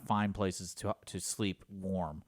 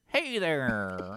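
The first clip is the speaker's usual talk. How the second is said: put-on old-fashioned, old-timey man's voice, higher pitched; 4 semitones higher than usual. Imitating a cat whose meow sounded like an old-timey guy voice. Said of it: "you hear".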